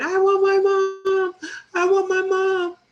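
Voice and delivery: very high, very loud, drawn-out wailing sob. Retelling a moment of grief after a mother's passing: imitating own past crying. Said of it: "I was just crying".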